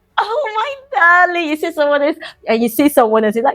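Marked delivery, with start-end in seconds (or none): 0.2-1.5 very high, sunny, bubbly, high-energy, drawn-out delivery. Demonstrating greeting someone while in high energy, bubbly high-energy greeting. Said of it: "because you're in high energy".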